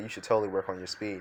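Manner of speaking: ordinary delivery, nothing marked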